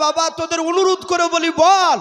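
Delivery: wailing voice.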